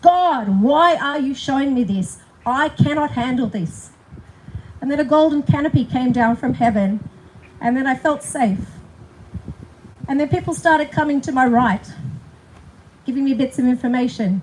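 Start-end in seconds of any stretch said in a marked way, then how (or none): 0.0-3.9 slow, deliberate, furious, very angry outburst. Retelling what they said to god during a tantrum, in a reenacted very angry voice. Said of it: "I said in a very angry voice".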